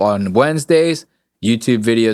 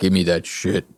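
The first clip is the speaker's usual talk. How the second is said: put-on deep bass voice, lower and quieter; 5 semitones lower, 5 dB quieter than usual. Retelling what a guy in a video said: imitating a deep bass voice. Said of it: "some goddamn bass in that goddamn voice".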